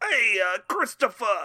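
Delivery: loud, tough-guy Italian-American mob-boss accent. Challenged to do a better impression, the speaker calls out in a Tony Soprano impression. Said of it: "you do a better job. Go ahead".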